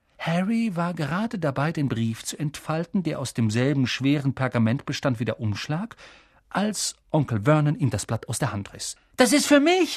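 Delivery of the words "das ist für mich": very high-pitched crying out. Harry, as Uncle Vernon snatches the letter from his hand, calling out. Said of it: "rief Harry".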